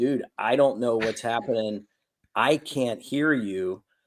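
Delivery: plain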